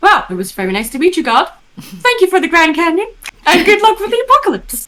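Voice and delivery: very high, swooping, sing-song lilting voice. Imagining a friend's line thanking God in the scene: imitating Josh. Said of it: "I can hear Josh saying".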